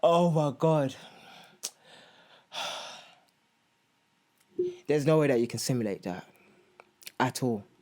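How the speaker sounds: fighting back tears, near crying. Recalling watching people wheeled out at the hospital: on the verge of tears. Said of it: "I'm gonna cry".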